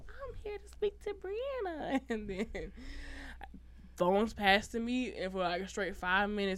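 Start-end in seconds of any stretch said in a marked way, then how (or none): 0.1-2.0 very high, faked, put-on girly voice. Retelling how he pretended to be a girl on the house phone, faking a high girl voice. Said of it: "make his voice a little high".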